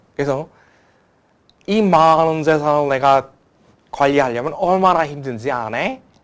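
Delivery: booming, very loud North Korean dialect. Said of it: "북한 사투리를 이렇게 하시더라고요".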